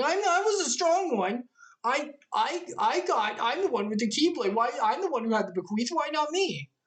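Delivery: mock high, blubbering, stumbling, tearful crybaby whine. Recapping a scene, the speaker acts out Riku running back, Riku mock crying and whining. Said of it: "cries and whines like".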